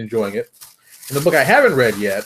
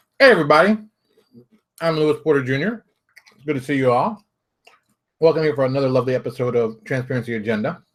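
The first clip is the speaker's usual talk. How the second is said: talking while eating, mouth full, chewing. Opening an episode of Transparency Agenda, the host greets viewers while eating. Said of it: "this bag of tostados I'm eating".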